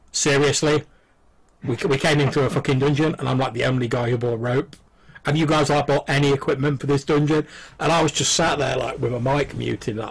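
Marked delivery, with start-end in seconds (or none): none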